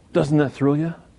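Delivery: whispered speech. Asking the audience after quoting Solomon, whispered. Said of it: "I said it in a whispered voice".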